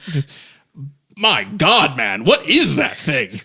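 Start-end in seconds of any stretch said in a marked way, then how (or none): 1.2-3.4 put-on slow, startled, aghast old-man exclamation. Voicing an older man with spectacles who is startled by a beast: shocked older man. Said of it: "almost loses his dentures in a heartbeat".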